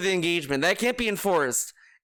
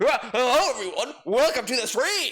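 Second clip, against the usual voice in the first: exaggerated, over-the-top cartoon character voice; 4 semitones higher than usual. The speaker mocks how a streamer greets his stream: mocking cartoon-character voice. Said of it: "He talks like a fucking cartoon character".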